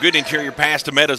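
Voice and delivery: plain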